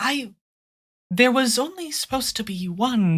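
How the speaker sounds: hushed, high mutter under the breath. A narrator voices a woman glancing at the blue-robed figure beside her; muttered under her breath. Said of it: "she says, kind of under her breath".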